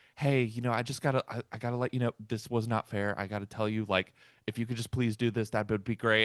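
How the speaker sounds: mock timid, soft, nervous, very polite voice. Retelling an athlete approaching a referee about a foul: imitating nervous politeness. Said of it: "very politely but like nervously goes up".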